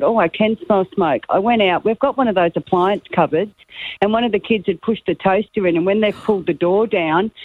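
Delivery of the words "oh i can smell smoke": usual speaking voice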